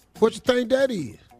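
put-on loud, high-pitched elderly man's voice. Retelling what the old boyfriend asked on FaceTime: imitating an old man talking. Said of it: "Then he said like this".

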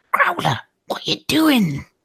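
whispering. In a graveyard, feeling uncomfortable, a player's character calls to growler in a whisper. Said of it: "so I kind of just whisper".

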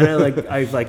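high-pitched, loud laughing.

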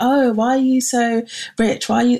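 mock playful teasing. Recalling how they teased a guy all day; retelling teasing someone. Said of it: "I was teasing him throughout".

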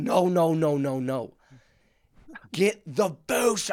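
very slow, drawn-out yell over crowd noise. Retelling telling a trainer what drink to fetch: retelling yelling over a loud crowd. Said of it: "yelling at him 'cause the crowd is loud".

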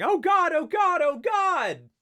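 very high, loud, panicked turkey squawk. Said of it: "the sound of the turkey yelling".

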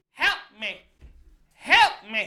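loud, slow, dragged-out shout. Retelling a man outside the store who starts shouting at the speaker again, imitating someone shouting for help. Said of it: "he just starts shouting at me again".

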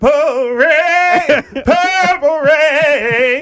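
playful put-on yell. Joking about what they would do when people die, the speaker mock-yells. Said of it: "Why are you yelling it like that?".

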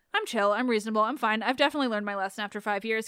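normal talking voice

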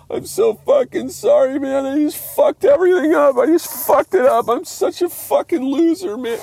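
weepy, crying, very high-pitched voice. Retelling how a drunk friend apologized while crying on the curb: imitating someone crying.

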